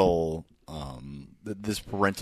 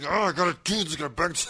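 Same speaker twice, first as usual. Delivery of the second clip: very high-pitched voice with pressing urgency; 9 semitones higher than usual. Imitating a movie character unloading sand: imitating urgent delivery. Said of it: "This urgency".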